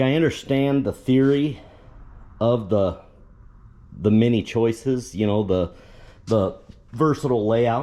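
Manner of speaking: stuttering, stammering, repeating words. Explaining a bed layout they find confusing, the speaker is stuttering. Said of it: "Sorry, I'm stuttering".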